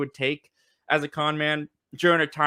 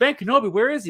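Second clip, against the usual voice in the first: thrilled, eager outburst, high and raised; 8 semitones higher, 5 dB louder than usual. Retelling how a young princess reacts to a name: imitating someone excited. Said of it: "she gets really excited at the".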